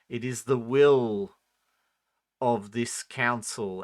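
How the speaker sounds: full, resonant voice, with will drawn out. A game narrator voices a figure addressing the group, in a resonant voice. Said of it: "in this kind of resonant voice goes".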